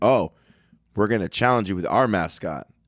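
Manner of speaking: usual speaking voice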